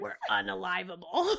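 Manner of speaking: gleeful, growly little cockroach creature voice. Speaker riffing with a co-host about being little cockroaches, in a Beetlejuice-like voice. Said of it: "I don't know where that voice came from".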